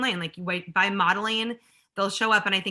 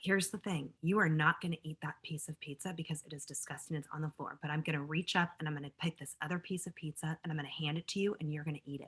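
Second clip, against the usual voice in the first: hushed, very quiet half-whisper; 4 semitones lower, 11 dB quieter than usual. Retelling what was said to an upset child at a pizza party: retelling a half-whisper. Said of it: "I just whispered in her ear".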